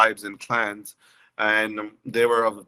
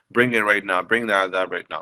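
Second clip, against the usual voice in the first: ordinary talk, nothing marked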